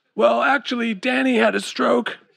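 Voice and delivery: raspy, high-pitched voice. Reading a story, Chad tells Amber the news about Danny: raspy voice. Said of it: "he said in a raspy voice".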